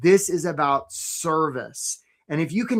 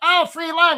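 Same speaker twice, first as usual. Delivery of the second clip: very high, squeaky, funny crab voice; 12 semitones higher, 4 dB louder than usual. Telling a story about a crab coming upon a crab pot, in Charlie the crab's funny voice. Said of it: "He's just got a funny voice".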